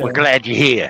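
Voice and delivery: put-on baby character voice. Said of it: "he did the voice for the, the infant child".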